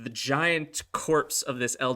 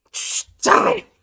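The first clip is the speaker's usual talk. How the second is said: very loud, raging, furious goblin yell; 10 dB louder than usual. Voicing a goblin stabbing a dead owlbear: goblin screaming in rage. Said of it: "continues to scream, uh, in the goblin tongue".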